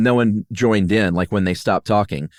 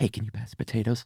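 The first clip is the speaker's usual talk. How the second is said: very quiet, hushed aside; 11 dB quieter than usual. Showing how to ask for the potatoes during someone's story, hushed tone. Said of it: "might do it in a hushed tone".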